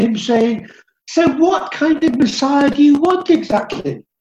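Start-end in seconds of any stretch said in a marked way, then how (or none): 1.1-4.0 put-on, openly exasperated, fed-up delivery. Imagining what was said in the marketplace story: retelling an exasperated question. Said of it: "You can almost hear the exasperation in Jesus' voice".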